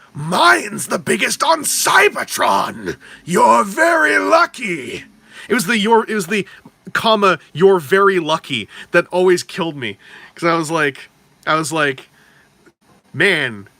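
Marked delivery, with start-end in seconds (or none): 0.2-5.1 boastful cartoon supervillain robot voice, slow and swooping. Quoting a favorite cartoon line to the hosts, in a G1 Megatron voice. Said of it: "if you had it in like a G one Megatron voice".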